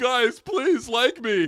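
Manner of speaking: mock very slow, high, drawn-out, tearful whiny plea. Podcaster mocking a wrestler after a weak crowd reaction: mocking Charlotte crying. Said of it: "she was literally crying like".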